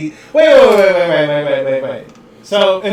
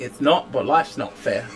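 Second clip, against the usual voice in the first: put-on loose, soft, half-formed, vague Australian accent; 5 semitones lower, 8 dB quieter than usual. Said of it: "I think vaguely Australian".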